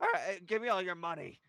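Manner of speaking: raspy, rasping voice. Retelling being held at gunpoint, speaker voices the robber: raspy Mr. Fitzgerald voice. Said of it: "I hear in this raspy voice".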